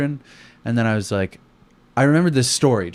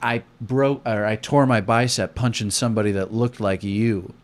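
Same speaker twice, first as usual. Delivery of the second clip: usual speaking voice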